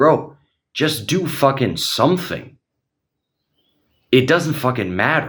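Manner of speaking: heated, angry, fired-up, fed-up rant. Speaker rants about banal lifting-program questions, getting heated. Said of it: "You can see I'm getting heated".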